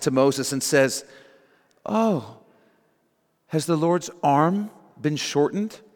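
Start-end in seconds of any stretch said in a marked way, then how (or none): 1.8-5.8 slow, heavily sarcastic jab. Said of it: "God sarcastically replies".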